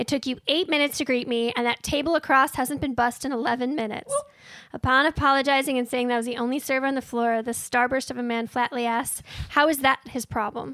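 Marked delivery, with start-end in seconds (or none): none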